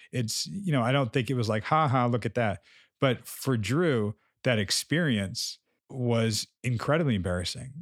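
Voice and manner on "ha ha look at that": ordinary talk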